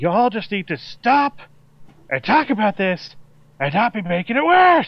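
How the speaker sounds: extremely angry, high-pitched furious shouting. Role-player performing their character's line in the scene: extremely angry shouting. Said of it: "I'm shouting that in like an extremely angry way".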